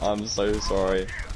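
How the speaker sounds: apologetic tone through wide, broken laughter.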